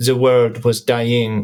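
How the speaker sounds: gentle, delicate French accent. Opening a dramatic narration, trying a delicate French accent this time. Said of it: "I'm going to try the French accent this time".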